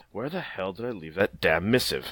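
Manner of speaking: muttering under breath. Voicing a character searching his desk: muttering under his breath. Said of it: "he mutters under his breath".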